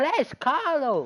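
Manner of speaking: high, slow, loud, drawn-out calling out.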